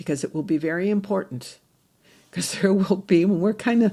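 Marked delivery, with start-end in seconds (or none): 2.3-3.9 speech half-laughing, laughter through words. Addressing listeners, laughing while talking. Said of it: "excuse me for kind of laughing".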